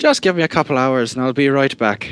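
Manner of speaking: silly put-on Irish accent. Voicing a female character after the wheel lands, in an Irish accent. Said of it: "She's Irish now".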